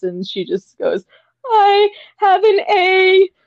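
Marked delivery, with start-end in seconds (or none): 1.5-3.3 very high, drawn-out sobbing breaking up the words. Speaker retells a crying girl's answer about her class, imitating someone sobbing. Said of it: "while she's sobbing".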